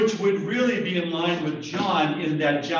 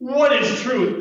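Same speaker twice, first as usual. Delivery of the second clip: dismissive, mocking sarcasm, loud and pitched up; 8 semitones higher, 6 dB louder than usual. Trying out one possible tone for a quoted question: sarcastic. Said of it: "He could have said it sarcastically".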